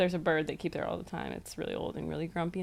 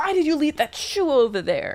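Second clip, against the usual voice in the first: very loud, booming, exasperated, swooping scolding man's yell; 9 semitones higher, 10 dB louder than usual. Retelling how a man mistook them for his wife: imitating a man yelling. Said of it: "started yelling at me".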